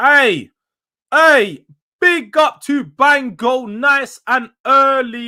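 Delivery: loud, slow, hyped-up shout.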